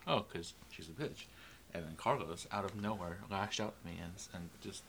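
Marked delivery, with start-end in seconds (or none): 0.1-1.3 playful, joking tone. Retelling what she jokingly said in the car before Carlos yelled. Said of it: "and I jokingly said".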